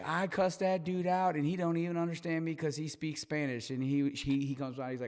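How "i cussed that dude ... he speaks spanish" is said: put-on mad, fed-up complaining, pitched high. Retelling what an upset customer said about the worker: imitating an angry customer. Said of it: "She was so mad".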